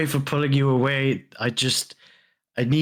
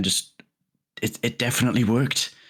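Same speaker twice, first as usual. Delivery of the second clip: spoken very quietly; 2 semitones lower than usual. Speaking aside to one other character, very quiet. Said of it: "I just very quietly say to Van".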